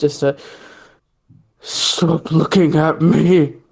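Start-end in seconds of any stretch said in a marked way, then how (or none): 1.6-3.5 slow, gruff, rough, gravel-filled voice. After a couple seconds with no response, a voice answers you in a gruff, gravelly voice. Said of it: "in this like gruff, kind of gravelly voice".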